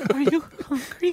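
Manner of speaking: high, tearful mother voice on verge of tears. Showing the others an impression of his mother: imitating his mother, near tears. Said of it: "Bobby does a great impression of his mother".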